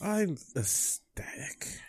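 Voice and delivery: slow, whispered, deadpan, sarcastic mock ecstasy. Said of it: "You don't sound happy".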